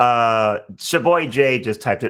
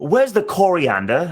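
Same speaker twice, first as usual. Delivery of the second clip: put-on Australian accent; 3 semitones higher than usual. Retelling what australian customers asked at the produce department: imitating australian customers' accent. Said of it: "They would come in, like".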